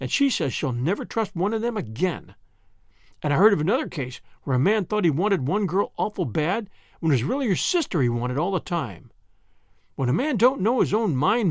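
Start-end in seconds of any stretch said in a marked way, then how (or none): none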